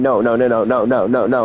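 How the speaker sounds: low, flat, refusing tone. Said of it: "I'm like".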